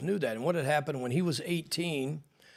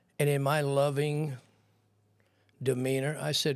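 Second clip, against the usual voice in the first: plain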